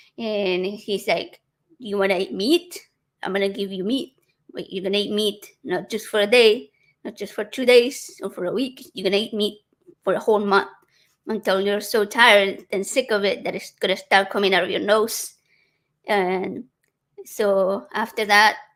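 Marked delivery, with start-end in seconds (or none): none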